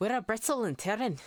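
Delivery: bad put-on, vague Irish or Scottish accent. Storyteller voicing a woman in muddy clothes asking a question, bad Irish or Scottish accent. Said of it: "I usually default to just bad Irish or Scottish accent. I'll do it again".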